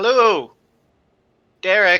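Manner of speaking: loud, high-pitched yelling call. A player's character calls up to the two figures above, yelling up a greeting. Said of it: "I'll yell up to them".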